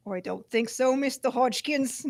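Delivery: put-on Boston mobster voice with Boston accent. Playing a gangster character addressing mister hodgkins, boston accent. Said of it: "It was like Boston".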